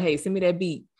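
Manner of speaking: ordinary talk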